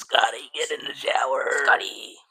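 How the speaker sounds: loud, rasping goblin voice. Asked to imagine the shower goblin's voice, a co-host tries it, in a raspy shower-goblin voice. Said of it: "I would imagine your voice being raspy".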